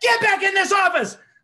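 put-on screaming. Speaker retelling a tall man yelling at him in the hallway, retelling someone screaming. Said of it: "Screaming and yelling at me".

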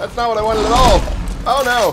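alarmed dismay.

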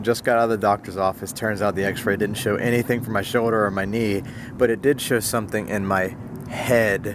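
usual speaking voice

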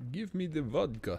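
high Russian accent sliding into a vampire voice. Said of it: "that was less Russian and more Dracula".

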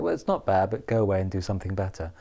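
ordinary talk, nothing marked

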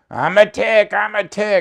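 very high, very slow, shrill, drawn-out scream. Retelling how Leonard screamed down the hall in a tick costume: imitating Leonard screaming. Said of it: "screaming down the hall".

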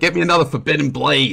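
put-on high, elderly woman's New Jersey accent. Describing a cocktail, imitating old New Jersey women ordering it in a New Jersey accent. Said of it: "old New Jersey women talking in New Jersey accent".

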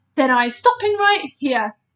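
sharp, terse tone. A character, told his tale is hard to believe, refuses to go on, sharply. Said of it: "said the BFG sharply".

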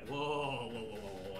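low, hushed, shocked, scandalized whoa.

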